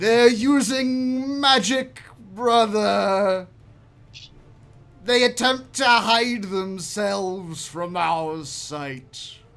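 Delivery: loud, slow dragon voice, drawing out using. Voicing a blue dragon that flies over the players: voicing a blue dragon. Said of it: "the blue dragon. It says".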